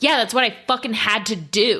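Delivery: defiant-sounding delivery. Retelling how he answers when called out: imitating him doubling down. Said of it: "He's like".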